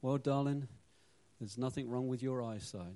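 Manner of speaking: put-on soft, thoughtful tone. Retelling a joke, voicing the husband answering his wife in a mock soft, thoughtful voice. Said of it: "in a soft, thoughtful voice".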